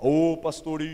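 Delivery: imitated big, loud voice. Retelling a visit, the speaker imitates a horse tamer calling out to him: booming voice. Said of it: "o seu Tião tinha um vozeirão".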